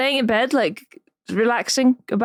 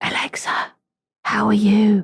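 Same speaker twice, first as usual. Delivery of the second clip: whispering quietly. Trying out a voice assistant's whisper mode: whispering. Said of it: "where you whisper to it and it whispers back".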